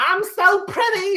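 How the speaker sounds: put-on very high, loud, tipsy girl's drunken squeal. Retelling what another girl said: imitating a drunk girl. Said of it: "drunk as fuck".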